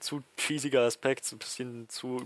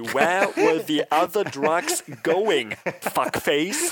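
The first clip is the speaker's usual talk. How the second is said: put-on menacing voice, higher and louder; 5 semitones higher, 8 dB louder than usual. Retelling a sketch where Batman tries out voices: John Malkovich voice. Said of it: "so über John Malkovich".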